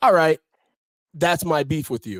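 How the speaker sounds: ordinary talk, nothing marked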